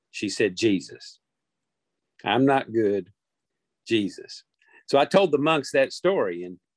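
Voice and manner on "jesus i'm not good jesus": very slow, unhurried, deliberate, drawn-out words. Retelling what someone said barely audibly: imitating a very soft voice. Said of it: "she said it so softly I could barely hear her".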